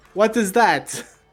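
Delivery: curious, wondering character voice with pitch lifted up. Voicing Arabelle asking about the new pet: voicing young Vistani girl Arabelle. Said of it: "She looks over at the bullet and she says".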